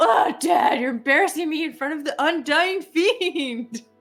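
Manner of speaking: put-on high, slow, sulky, complaining moody-teenager voice. Acting out a moody teen character answering her dad: moody teenager voice. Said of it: "What happened to my sweet baby girl?".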